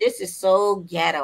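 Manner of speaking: ordinary talk, nothing marked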